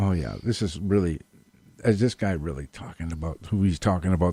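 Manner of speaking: very hushed, low half-whisper. Retelling what he half-whispered into his friend's ear while a man talked, half-whispering. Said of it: "I whispered to him, like a very whisper".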